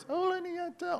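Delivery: very high, very soft, hushed, small voice. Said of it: "as Glamma came up and said those words".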